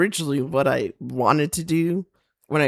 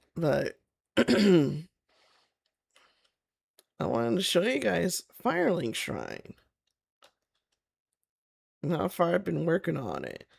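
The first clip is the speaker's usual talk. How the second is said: strained voice, frog in the throat, quieter; 2 semitones higher, 5 dB quieter than usual. Showing viewers a build after apologizing for sinuses: frog in the throat. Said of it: "I got a frog in my throat".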